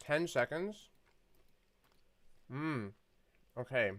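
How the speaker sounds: chewing mid-sentence, mouth full. Speaker apologizes for eating during the conversation, talking while chewing. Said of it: "I'm just chewing".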